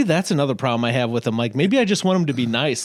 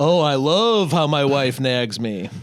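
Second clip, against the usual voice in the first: imitated, mock sarcastic tone. Imitating an actor complaining about his wife: imitating a sarcastic tone. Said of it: "sarcastic about how his wife".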